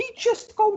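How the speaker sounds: pompous, haughty noble-style voice.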